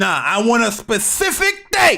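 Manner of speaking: screaming at top of lungs, high, rising. A speaker mid-rant, then apologizing for it, screaming. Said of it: "Sorry for screaming".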